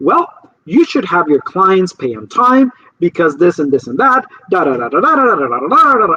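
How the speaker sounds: mock scolding, preachy teacher-style lecturing tone. Retelling how a woman who answered the call lectured the speaker, imitating a lecturing tone. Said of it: "her tone of voice was lecturing me".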